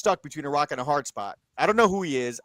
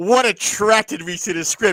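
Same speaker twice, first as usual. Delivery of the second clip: fed-up, exasperated, raised and pitched-up; 6 semitones higher, 5 dB louder than usual. Speaker retelling a red-carpet moment, mock-annoyed Nora Ephron walking off. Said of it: "As she walked off the red carpet, cursing".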